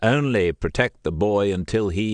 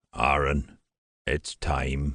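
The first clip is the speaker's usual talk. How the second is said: unusually soft, hushed, low and quiet voice; 7 semitones lower, 5 dB quieter than usual. A narrator reads the master's words as dusk falls, unusually soft voice. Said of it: "in an unusually soft voice".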